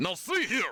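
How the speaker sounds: angry put-on character voice. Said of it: "he's pretty mad".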